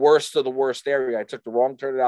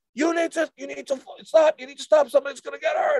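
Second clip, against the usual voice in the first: urgent, raised pitch. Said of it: "He's like".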